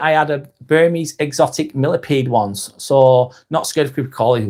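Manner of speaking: ordinary delivery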